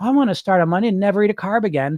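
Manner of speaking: put-on high, naive, childlike little-kid voice. Acting out the inner child voice that wants to lose weight: put-on childlike voice. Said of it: "you get this child like".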